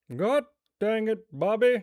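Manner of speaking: very loud, high-pitched hollering. Asked on stream about doing one, the speaker tries a Hank Hill impression. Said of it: "I absolutely cannot do a Hank Hill".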